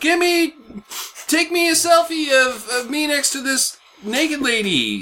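very high, whiny voice.

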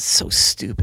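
breathy whisper under the breath. Retelling a remark heard from the left while watching: imitating a whisper. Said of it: "I hear this voice to my left whisper".

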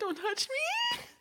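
very high-pitched, hysterical sobbing wail. Retelling pushing away a goodbye kiss, imitating own hysterical crying. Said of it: "I was hysterical".

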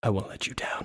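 close, leaning-in, very quiet, hushed whisper. Leaning in close to another character in the scene, whispering. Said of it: "I lean in to whisper that".

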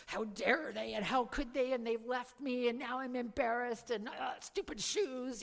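hushed, seething, fuming mutter under the breath. Retelling walking up to friends in clomping clogs: imitating seething anger.

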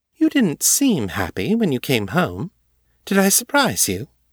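teasing, playful sing-song with sharp edge underneath. Ava presses Morgan, playful with a sharp edge. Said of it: "Ava's tone was still playful, but there was something sharp underneath it".

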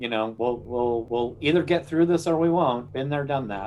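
ordinary talk

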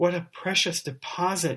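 soft sighing tone. Narrating Mr. Elton receiving the portrait to be framed, with a tender sigh. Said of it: "said he with a tender sigh".

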